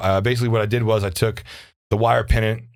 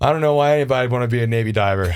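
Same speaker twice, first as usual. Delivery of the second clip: mock-panicked delivery. Retelling what a man screaming about the winch said over comms, imitating someone panicking. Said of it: "in your moment of panic".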